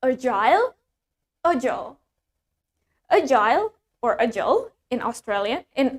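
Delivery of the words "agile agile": American English accent. Modeling a word's pronunciation for learners, american accent. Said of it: "In American".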